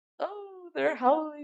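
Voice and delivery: put-on high, soft, hammed-up vampire accent. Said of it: "he really hams up the accent now".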